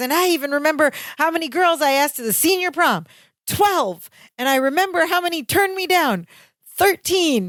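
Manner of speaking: put-on thrilled, eager voice. Retelling a sitcom scene where the character remembers his past: imitating excited Larry Appleton. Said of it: "And he's very excited at this point".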